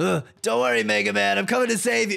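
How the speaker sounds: panting, out of breath. Calling out to mega man while on the way, panting, out of breath. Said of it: "*huff huff huff*".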